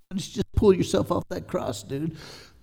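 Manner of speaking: sneering mocking jeer. Retelling how they mocked the one on the cross, imitating a sneer. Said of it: "They said it in a sneer".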